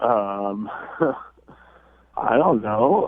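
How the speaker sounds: very slow, nervous, uncertain delivery. Answering why a date's text went unanswered, sounding a little nervous. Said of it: "you sound a little nervous".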